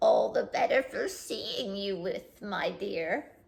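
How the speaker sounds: soft, wavering, wobbly, weird wolf voice. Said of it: "the wolf replied in his wobbly, weird voice".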